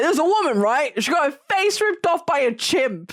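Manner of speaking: blunt delivery. Retelling how Sophie worded a story about a chimp attack: imitating Sophie's line delivery. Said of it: "she's like".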